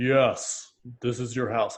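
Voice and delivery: big loud voice. Retelling a voice answering a question in a dream, in a big booming voice. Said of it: "big, booming, loud voice like".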